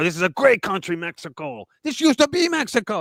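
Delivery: terrible put-on Mexican accent. Speaker imitates protesters holding Mexican flags in LA; terrible fake Mexican accent. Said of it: "That's a terrible Mexican accent".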